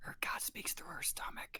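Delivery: hushed, very quiet whisper, said aside. Whispering a remark to the first mate about someone: whispering in character. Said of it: "I whispered to the first mate".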